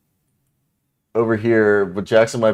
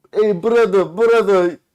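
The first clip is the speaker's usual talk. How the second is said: high, loud mock Eastern European accent. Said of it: "can you talk in an accent?".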